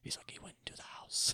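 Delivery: very quiet, hushed, whispered storyteller voice. Retelling a movie scene where the narrator starts whispering: imitating the narrator whispering. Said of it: "starts whispering".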